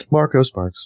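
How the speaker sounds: lilting, tuneful, sing-song delivery. Introducing oneself at the start of a podcast: sing-song delivery. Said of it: "you all kinda sing-song that".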